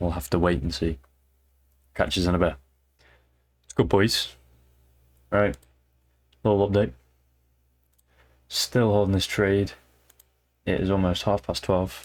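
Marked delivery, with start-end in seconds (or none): 6.4-12.0 plain, normal talking voice. Giving a little update to viewers on a trade still open: talking very quietly. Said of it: "That's why I'm talking very quietly".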